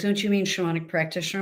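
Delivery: ordinary talk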